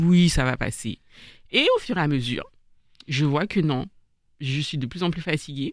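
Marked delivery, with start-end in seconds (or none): none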